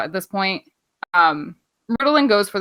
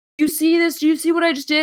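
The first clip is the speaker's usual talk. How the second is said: put-on, high-pitched hollering yell; 10 semitones higher than usual. Retelling a wrestling moment, imitating someone yelling at the crowd.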